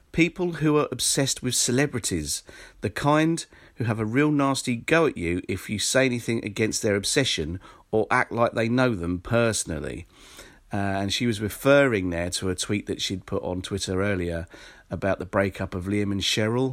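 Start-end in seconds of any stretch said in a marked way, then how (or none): none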